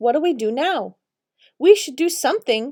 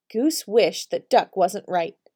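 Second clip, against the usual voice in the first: usual speaking voice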